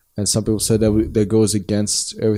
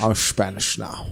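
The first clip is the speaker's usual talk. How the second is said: put-on Scottish accent, quieter; 5 dB quieter than usual. Joking about an actor playing a Spaniard: Sean Connery impression. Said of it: "there's only one Sean Connery".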